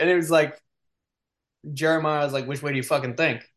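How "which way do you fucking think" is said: mock-sassy tone, lower and faster. Retelling a game story, acting out a character's sassy retort to the captain. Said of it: "he's sassy".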